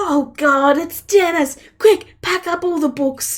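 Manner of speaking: high, loud, alarmed, frantic panicked shouting. Voicing wizards upstairs who hear a visitor is coming: panicked shouting wizards. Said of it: "people going".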